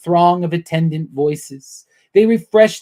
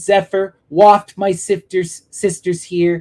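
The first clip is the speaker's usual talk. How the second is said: ordinary delivery, nothing marked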